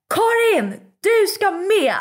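mock excited scream. Retelling what she yelled to a friend, re-enacting an excited party scream. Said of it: "det var partyskrik".

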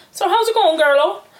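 local-sounding Cork accent. Listing types of cork accent, demonstrating the one a friend's sister has: cork accent. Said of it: "the first one is that one that your sister has".

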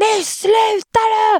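put-on full-volume scream. Retelling a man screaming from behind right into their ear, retelling a full-volume scream. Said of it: "bakifrån och skriker, alltså det högsta han kan".

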